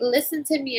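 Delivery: put-on sassy little-girl voice. Imitating a sassy child who talks to her: sassy child voice. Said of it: "she talks like this".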